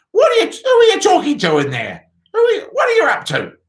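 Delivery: shrill, screechy, very high call. Narrator voicing Grandma calling from the next room, in a screechy voice. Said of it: "came the screechy voice from the next room".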